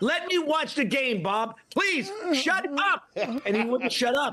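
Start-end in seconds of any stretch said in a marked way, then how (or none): 0.0-3.1 yelling, higher pitch. Retelling watching a game while a commentator kept talking, retelling yelling at the TV. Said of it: "I was yelling at the T V".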